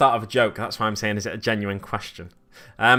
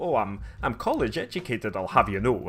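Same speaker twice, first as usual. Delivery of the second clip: put-on Edinburgh accent, quieter; 5 dB quieter than usual. Describing how people from Edinburgh talk: put-on Edinburgh accent. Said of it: "talking a bit more like this".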